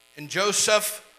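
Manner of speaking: plain reading voice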